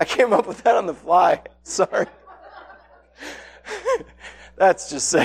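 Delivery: talking through laughter. Apologizing after making up a joke on the fly: laughing while talking. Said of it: "I'm laughing at my own joke".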